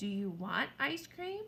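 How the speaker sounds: rising intonation on the word "cream". Explaining reading with a question mark: voice rising at the end on cream. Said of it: "Your voice kind of goes up".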